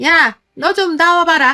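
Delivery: high, loud, slow scolding shout.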